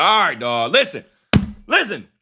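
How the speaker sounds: angry, impatient tone. Retelling how the Lord, angry at Moses, answers him: imitating an angry God. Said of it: "He pissed off".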